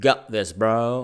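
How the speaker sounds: put-on strong, laid-on, really American accent. Quoting ex-mountaineer guys who lost limbs, in a really american accent. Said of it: "in a really American accent".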